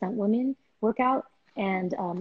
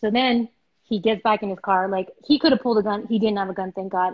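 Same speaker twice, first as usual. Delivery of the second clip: ordinary talk, nothing marked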